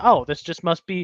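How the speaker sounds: normal talking voice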